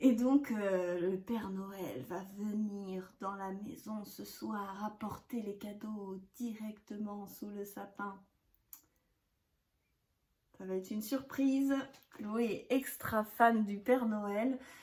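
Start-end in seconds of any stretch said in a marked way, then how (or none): 0.5-8.2 soft, quiet voice. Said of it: "Faudrait pas que je parle trop fort".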